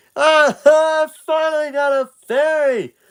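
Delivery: put-on overjoyed, boyish cry, pitched very high. Voicing a boy who finally gets a fairy: very excited boy. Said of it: "He's very excited".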